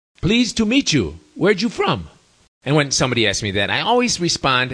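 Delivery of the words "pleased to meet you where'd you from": high-pitched, heavily broken non-native English. Retelling what a bodybuilder said on meeting the speaker, in very broken English. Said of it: "he said in very broken English".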